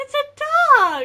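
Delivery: thrilled, excited, very shrill, very loud. Talking about animals as the talk turns to a dog: excited, super high-pitched. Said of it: "my voice gets super high pitched".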